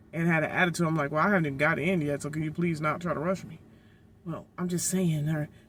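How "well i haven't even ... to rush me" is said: ordinary talk, nothing marked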